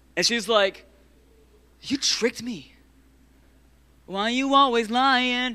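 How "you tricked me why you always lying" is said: high, slow, put-on accusing tone. Acting out Delilah accusing Samson: mock accusing tone. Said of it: "hits him with that one".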